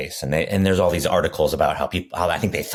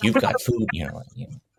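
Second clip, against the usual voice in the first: high, passive-aggressive little jab; 6 semitones higher than usual. Speaker showing how the voice he describes must sound, in a passive-aggressive voice. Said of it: "It has to be a passive aggressive voice that says".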